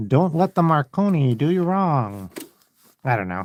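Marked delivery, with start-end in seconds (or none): 0.1-2.3 mock old-fashioned 1930s voice. Joking line about the Marconi, a radio with vision: weird 1930s voice. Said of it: "speaking in that weird nineteen thirties voice".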